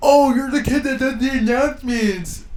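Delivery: mocking, high, loud put-on kid voice.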